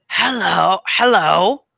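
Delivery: woman dwarf character voice. In a tabletop game, a player's character greets someone, in a female dwarven voice. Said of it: "so they say in a female dwarven voice".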